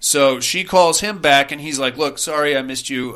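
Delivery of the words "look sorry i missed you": put-on sweet old man voice. Retelling a film scene, a man calling about a babysitting job: sweet old man voice. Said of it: "like this sweet old man sounding".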